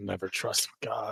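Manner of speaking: muttering under the breath. Thrown off from a planned one-on-one fight, muttering under the breath. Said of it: "So I'm just gonna mutter under my breath".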